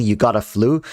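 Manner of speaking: ordinary delivery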